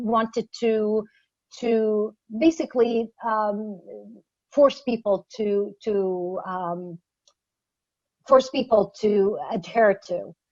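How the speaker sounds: slow, halting, faltering stutter, repeating words. Talking about compulsory rules in Egypt, stuttering and halting. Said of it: "the reason why I'm stuttering".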